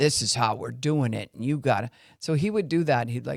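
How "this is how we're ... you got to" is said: mock big, bossy, commanding adult voice. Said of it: "someone had the big".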